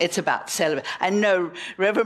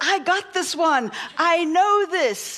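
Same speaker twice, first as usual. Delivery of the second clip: put-on, bursting with eager confidence, excited, pitched up; 10 semitones higher than usual. Retelling a joke where a husband grabs his wife's knee: imitating an excited husband. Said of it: "Frank got so excited".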